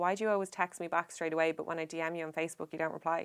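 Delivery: ordinary delivery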